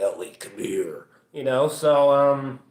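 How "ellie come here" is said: deep, soft voice dropped to the bottom of range. Describing a character's voice, the speaker quotes Joel calling Ellie in a deep Joel voice. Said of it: "such a deep, like, almost like Josh Brolin sort of deep octave voice".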